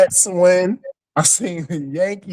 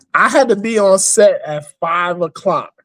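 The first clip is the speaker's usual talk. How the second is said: normal talking voice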